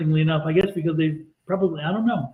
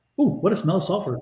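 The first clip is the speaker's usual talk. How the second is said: ordinary talk, nothing marked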